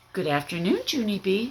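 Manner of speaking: nice, sweet voice dropped very low. Narrator reads Missus greeting Junie B., in a very nice voice. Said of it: "she said in a very nice voice".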